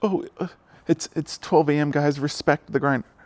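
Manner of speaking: high, taunting, mocking voice. Mocking a chess player's late-night post: mocking imitation of him. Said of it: "It's like".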